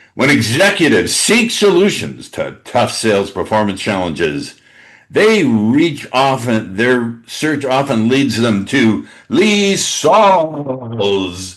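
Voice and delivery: loud, slow, deliberate put-on announcer voice. Reading a publicist-style introduction aloud, in a put-on announcer voice. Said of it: "I'm going to do my announcer voice".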